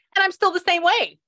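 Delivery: very high-pitched voice. Repeating what the mother says, just like that: imitating the mother's voice. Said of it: "Just like that, in that voice".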